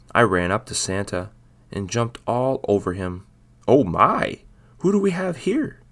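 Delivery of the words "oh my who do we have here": loud, startled, surprised, pitched way up. Santa, as a cat runs up and jumps all over him, speaks in surprise. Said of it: "spoke Santa in surprise".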